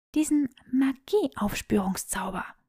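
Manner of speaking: soft, hushed half-whisper under the breath. Granger replies to Draco, half-whispering her answer. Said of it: "flüsterte Granger".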